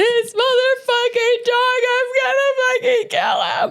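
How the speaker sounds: mock sobbing, very high-pitched crying rant. Retelling a phone call to a husband while crying: retelling own crying rant. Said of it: "And I'm crying".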